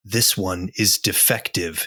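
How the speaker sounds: hushed, slow, deliberate whisper. Voicing a character who leans forward toward a woman: whispering. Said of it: "he leans forward and he whispers".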